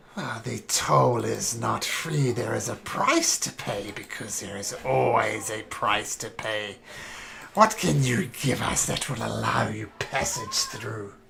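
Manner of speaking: eerie, creepy cackling voices. Game master voicing the trees answering a traveler, cackling voices. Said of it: "You hear the cackling voices".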